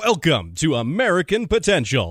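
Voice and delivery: radio broadcast announcer voice. Asked by another speaker for a bit of their announcer voice: announcer voice. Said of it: "Give us a little bit of your announcer voice".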